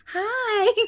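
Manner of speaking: tiny, very high, squeaky "hi". Retelling how he answered them: very high-pitched hi. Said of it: "Like in a super high voice".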